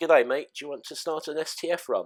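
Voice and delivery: not-quite-convincing put-on Australian accent. Quoting the famous line from when they first met: attempted australian accent. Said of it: "forgive me, I can't do an Australian accent very well".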